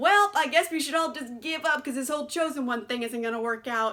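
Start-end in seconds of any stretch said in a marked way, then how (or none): none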